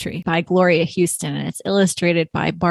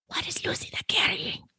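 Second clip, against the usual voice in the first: very hushed, breathy theatrical stage whisper. Reading a picture book aloud, a woman in church: stage whisper. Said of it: "in a stage whisper is how I read it".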